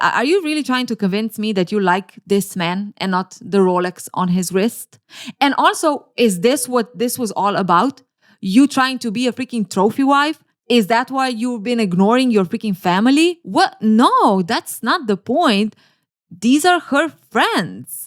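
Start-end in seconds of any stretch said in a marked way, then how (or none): none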